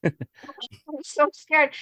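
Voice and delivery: mock sobbing, very high, squeaky ugly-crying voice. Retelling calling home homesick from a payphone: mock ugly crying. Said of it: "And I'd be going ugly cry".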